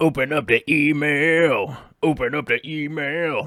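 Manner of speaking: cartoon voice with the word email drawn out. Streamer, asked by a viewer, does a Homestar Runner character: Strong Bad impression. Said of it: "I could do a strong bad impression".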